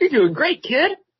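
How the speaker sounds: very high-pitched anime hero voice. Choosing a dream voice for Siri, answering in a Goku voice. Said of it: "I would probably be like Goku".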